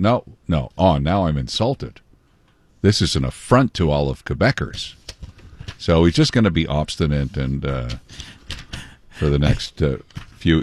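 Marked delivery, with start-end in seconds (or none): none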